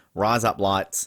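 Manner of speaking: Australian accent, "lights" sounding like "blades". Showing how the phrase sounds like razor blades: Australian accent. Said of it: "go for that Australian accent".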